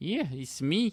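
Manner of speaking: put-on Scottish accent. Imitating an actor voicing the headmaster in a game: imitating Simon Pegg's Scottish accent. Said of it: "he was doing a Scottish accent again".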